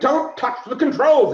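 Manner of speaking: very high, loud, urgent yell. Retelling the moment a guy grabbed the throttle, telling him off: retelling a shout. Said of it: "I'm like".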